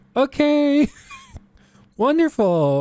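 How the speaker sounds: sing-song, bubbly chipper mom voice, pitched way up. Retelling a teacher's call to mom, imitating a bubbly mom on the phone. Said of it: "She's very bubbly on the phone".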